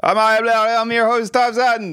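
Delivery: very high, overexcited, tripping over the words. Introducing yourself as the host of the podcast, overexcited. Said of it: "Sorry, I'm a bit overexcited".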